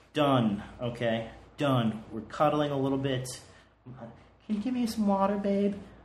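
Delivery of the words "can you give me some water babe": acted female voice, pitched high. Retelling what she asked for while cuddling: imitating her voice. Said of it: "that was her voice".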